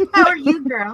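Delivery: put-on Southern accent. Greeting someone playfully, suddenly slipping into a Southern accent. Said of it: "I all of a sudden went southern".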